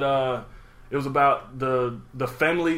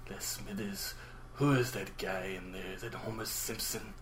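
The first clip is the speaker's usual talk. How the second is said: very quiet, soft, hushed voice; 5 semitones lower, 14 dB quieter than usual. Asked to try it with a new voice, the speaker does a Mr. Burns impression. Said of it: "Burns. Yeah, because I would always say".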